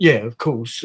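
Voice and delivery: condescending, patronizing, dismissive "yeah", acted out. Retelling how a drama commissioning head answered: imitating a patronizing tone. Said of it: "he was really patronizing".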